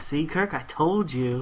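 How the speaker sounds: ordinary talk, nothing marked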